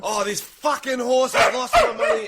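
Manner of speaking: hammy, over-the-top Australian accent, very high. Performing lines on request for a Squid Game-style character: over-the-top overacting in Australian accent. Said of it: "Australian accent, but you're going that Korean overact".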